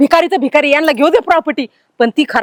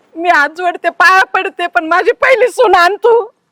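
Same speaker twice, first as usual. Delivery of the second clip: crying pleading tone, higher; 4 semitones higher than usual. Begging for her first daughter-in-law to be brought back: crying while pleading. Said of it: "रडू नको".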